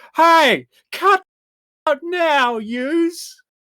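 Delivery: very high, loud, drawn-out shouty call. Voicing the deputy captain, doing a big rugby-field call: shouty deputy captain voice. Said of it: "put on his best shouty deputy captain voice".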